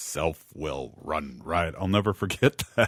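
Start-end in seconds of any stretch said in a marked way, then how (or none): 0.0-1.7 soft, on-air radio announcer voice. Recalling how a man from meetings with a local radio show said it, radio voice. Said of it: "the way he said it with his uh, radio voice".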